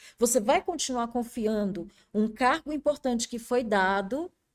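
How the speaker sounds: plain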